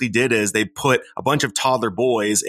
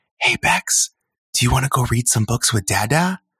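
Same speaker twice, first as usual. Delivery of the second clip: put-on soft, gentle, sweet whisper. Father retelling what he whispered to Bex, gentle sweet whisper. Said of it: "whisper in, like, a gentle, more sweet voice".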